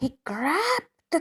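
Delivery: ordinary delivery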